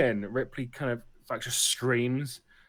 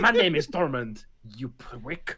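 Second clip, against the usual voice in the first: languid put-on French aristocrat voice. Voicing another speaker's cat as asked: louche french duke voice. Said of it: "That's what he sounds like".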